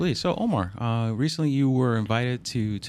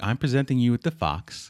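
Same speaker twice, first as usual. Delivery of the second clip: terrible, bad, fake put-on British accent. Retelling what a man said, in a bad British accent. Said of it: "your British is terrible".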